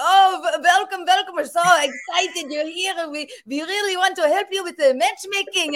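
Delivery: put-on comic shtick in a Yiddish-inflected accent. Retelling the rabbi's welcome shtick on their podcast: imitating Rabbi Yisrael Bernat's accent. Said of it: "started speaking with this accent".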